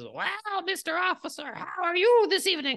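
put-on very high-pitched old crone voice. Narrating a game scene, voicing a hag who greets the officer character, in a hag voice. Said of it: "this hag turns to you and says".

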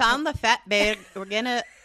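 loud, terrible fake Irish accent, half Scottish. Retelling people announcing a Facebook Live, in a terrible fake Irish accent. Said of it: "that's, like, very Irish".

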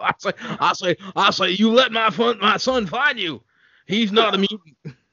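high-pitched cartoon rooster voice. In a comedy riff, the speaker slips into a Foghorn Leghorn voice. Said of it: "Started doing foghorn leghorn".

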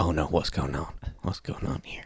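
mock muttering under breath. Retelling waking up as a man dug a hole: imitating muttering under breath. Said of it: "very under my breath".

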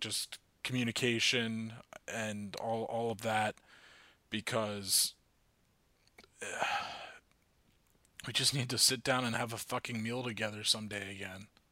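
soft, a little angry, a little emotional. Speaker addressing listeners, getting a little angry and emotional. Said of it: "I'm getting a little angry and a little emotional".

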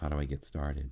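soft, mellow voice. Retelling what a woman at the fire asked: imitating a very soft voice. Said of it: "her voice was very, very soft".

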